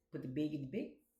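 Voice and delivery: put-on Canadian accent. Guessing how people talk near canada: imitating a canadian accent. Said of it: "he was imitating a Canadian accent".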